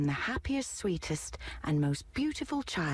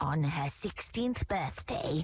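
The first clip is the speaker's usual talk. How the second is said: spoken in a hiss. Narrator reading a fairy casting a spell over the baby at a christening, hissed. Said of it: "she hissed".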